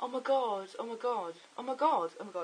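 high, gasping, breathless, excited gushing. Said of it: "I got sort of saying".

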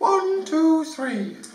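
very high voice. Elliot counts to three again after being told to pitch up his voice. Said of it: "Just pitch up your voice".

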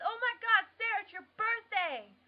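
thrilled yell, very high and very loud. Realizing today is the listener's birthday, a really loud excited shout. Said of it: "that was really loud".

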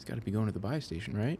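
low, quiet voice. Playing a game, worried an enemy will hear, talking low. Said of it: "I don't know why I'm talking so low".

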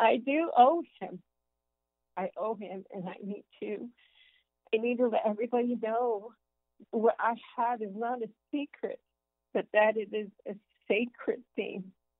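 heartfelt voice, welling up with emotion. Speaking about owing the Savior and needing to share it, getting emotional. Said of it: "I'm getting emotional again".

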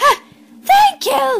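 very high, loud, delighted happy squeal. A girl on her booster seat thanks someone; squealed happily. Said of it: "Holly squealed happily".

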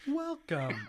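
virtual assistant voice. Suggesting a greeting for a speaker inside a mounted head: Siri voice. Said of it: "you have to be like Siri's voice".

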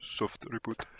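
whispered, barely voiced, hushed and very quiet. Imagining Superman's move before striking, whispered.

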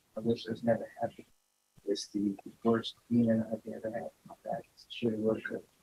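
soft, very quiet, barely audible delivery.

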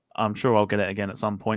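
ordinary talk, nothing marked

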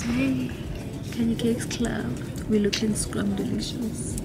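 whispering.

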